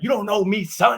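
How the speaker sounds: mock very high-pitched, hollering yell. Speaker recounting running alone in a storm, retelling a yell. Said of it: "and I'm yelling".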